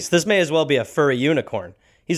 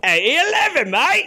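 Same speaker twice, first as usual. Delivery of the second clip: put-on Cockney accent, pitched very high. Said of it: "Sounded Cockney".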